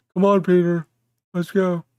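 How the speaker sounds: bad put-on cartoon character voice. Doing a horrible Joe Swanson impression calling to Peter. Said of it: "horrible, uh, um, Joe Swanson impression".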